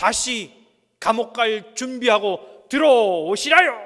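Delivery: mock northern Korean dialect. A speaker retells what a pastor's wife told her husband: put-on North Korean dialect. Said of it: "이 이북 사투리를 어떻게 하는지".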